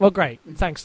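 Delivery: put-on flat, deadpan delivery. Retelling the other speaker's reaction, Martin Freeman-esque deadpan. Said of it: "some Martin Freeman-esque deadpan reaction".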